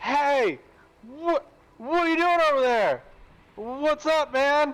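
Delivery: very high, loud, drawn-out hollering yell. Voicing a character calling out to a crow: yelling at a crow. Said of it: "I'm gonna yell at the crow in Auran".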